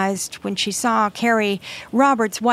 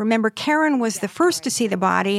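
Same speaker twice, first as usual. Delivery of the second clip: ordinary talk, nothing marked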